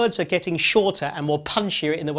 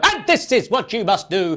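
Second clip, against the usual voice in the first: abrupt, sudden, loud, explosive burst; 3 semitones higher, 4 dB louder than usual. Showing how Proctor suddenly jumps out while speaking, in sudden explosive Proctor outburst. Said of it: "and suddenly go, ... suddenly jumps out ... explosive way of doing it".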